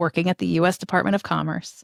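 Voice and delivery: ordinary talk, nothing marked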